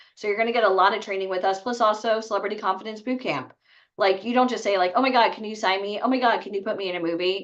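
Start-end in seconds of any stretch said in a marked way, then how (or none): 5.0-7.5 mock desperate begging tone. Acting out how not to ask for representation: imitating a desperate plea. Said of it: "You sound desperate".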